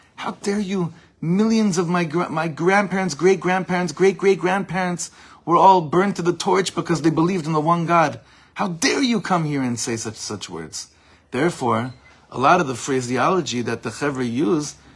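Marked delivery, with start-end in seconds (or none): 0.2-9.7 put-on mild, reined-in, scolding yell. Retelling what someone said while confronting them: imitating someone screaming. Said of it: "screaming at him".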